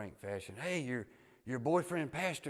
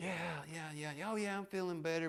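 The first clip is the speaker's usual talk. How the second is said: mock brightened, perked-up voice, pitched high; 8 semitones higher than usual. Retelling how he reacted while she talked to him: imitating him perking up. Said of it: "him perk up".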